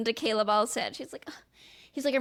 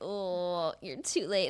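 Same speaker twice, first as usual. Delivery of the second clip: slow, put-on mopey, self-pitying, sad tone; 5 semitones lower, 3 dB quieter than usual. Retelling a scene, quoting a woman who runs over to Marissa, imitating someone sad. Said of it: "And she's all like sad".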